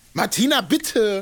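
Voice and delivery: high, half-laughing mock scolding tone. Imitating the mother's reply to Martina, mock-scolding, half laughing. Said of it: "Schon mit einem schimpfenden Ton, aber auch irgendwie lachend. Eher so".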